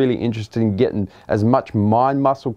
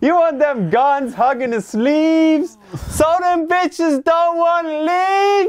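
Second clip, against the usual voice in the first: put-on very high, slow, drawn-out girly voice. Retelling a friend's gym line: imitating in high-pitched girl's voice. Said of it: "in that high-pitched girl's voice".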